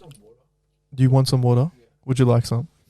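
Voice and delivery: condescending, patronizing tone. Offering the others some water, in a condescending tone. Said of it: "Why'd I sound so condescending when I said that?".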